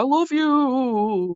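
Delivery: eerie, ghoulish dog voice, "you" drawn out. Recalling how the husband does the old dog voice: ghastly Gilligan dog voice. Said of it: "makes it sound kind of ghastly".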